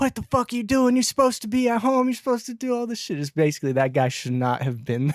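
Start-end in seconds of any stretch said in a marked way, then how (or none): 0.0-3.2 very high, shrill, furious yell. Retelling a wife yelling at her husband at a club: imitating a wife yelling. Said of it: "starts yelling at him, be like".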